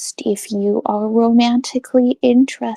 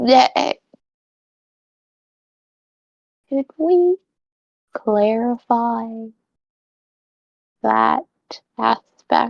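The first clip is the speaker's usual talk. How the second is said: lowered voice, slow and deliberate. Voicing a character who leans toward someone: lowered voice. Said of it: "lower her voice and then go".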